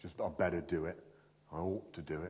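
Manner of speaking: low, soft, reluctant mumble with a grudging sigh.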